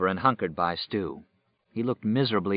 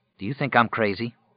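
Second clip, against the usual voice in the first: ordinary delivery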